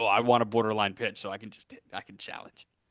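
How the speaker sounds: plain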